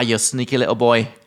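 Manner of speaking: put-on Scottish accent. Repeating a phrase the other speaker's mum used for him, in a Scottish accent. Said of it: "That was Scottish".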